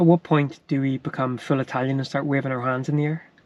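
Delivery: ordinary talk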